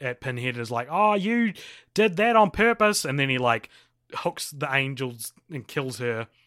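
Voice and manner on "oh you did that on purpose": angry, mad, pitched-up delivery. Retelling a film scene where the angel accuses Pinhead: imitating an angry angel. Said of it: "the angel gets real mad at".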